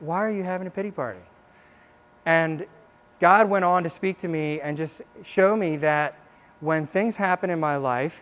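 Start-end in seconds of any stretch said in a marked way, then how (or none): 0.0-1.2 soft, gentle, kind tone. Retelling what God said to her, God's words, said in a nice way. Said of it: "He said it in a really nice way. Like".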